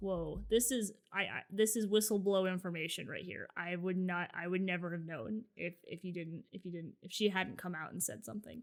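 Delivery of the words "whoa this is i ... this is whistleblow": plain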